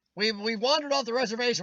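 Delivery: ordinary talk, nothing marked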